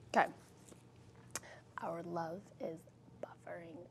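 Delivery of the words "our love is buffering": breathed out in a very soft whisper. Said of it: "I'll whisper".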